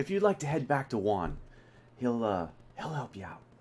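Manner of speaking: quiet, low, hushed whisper. Speaking to a group, pointing them to someone else for help: low whisper. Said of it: "just kind of like in a low whisper".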